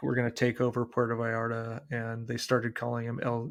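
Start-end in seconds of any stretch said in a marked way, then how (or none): none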